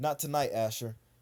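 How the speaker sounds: normal talking voice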